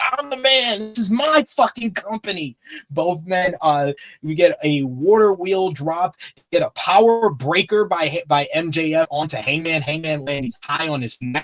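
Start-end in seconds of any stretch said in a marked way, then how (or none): 0.1-2.6 cocky, boastful bragging, pitched up. Recapping a match, imitating MJF bragging to the fans. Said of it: "So a different voice, you'd be bragging to the fans".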